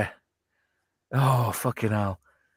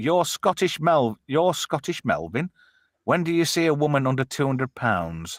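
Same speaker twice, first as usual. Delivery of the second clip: plain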